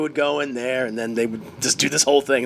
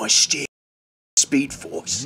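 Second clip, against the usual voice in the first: put-on heavy, broad, thick Cockney accent; 2 semitones lower than usual. Picturing how an actor will sound in a movie, in a thick Cockney accent. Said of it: "his thick cockney accent like".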